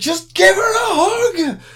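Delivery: full-on shriek, very high and loud, hug stretched. Recalling reacting to a scene with a poor girl: retelling a scream. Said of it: "I was just screaming".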